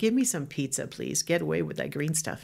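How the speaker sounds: normal talking voice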